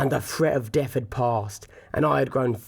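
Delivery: plain reading voice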